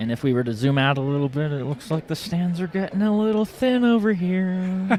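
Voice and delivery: hushed half-whisper with the word here drawn out. Commentating a game from the enemy stands: half-whispering. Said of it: "What are you whispering for?".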